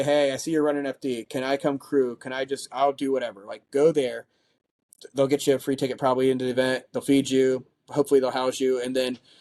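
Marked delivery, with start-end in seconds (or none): none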